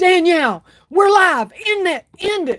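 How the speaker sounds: high, frantic, urgent, panicked screaming. Retelling telling danielle to end the live video: retelling own scream. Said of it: "I was just screaming at her".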